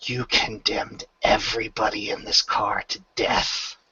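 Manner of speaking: whispered, hushed, soft and breathy. A player's character grabs a man by the neck and whispers to him. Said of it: "she's just going to whisper".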